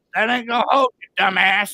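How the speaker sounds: put-on high-pitched, jeering old man voice. Retelling a voice heard in the ear: imitating an old man's voice. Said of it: "old man, goes".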